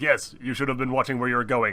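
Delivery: hard-line comic-book lawman character voice. Showing how a line from the story sounds: Judge Dredd voice. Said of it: "It sounds like he's the, like, Judge Dredd".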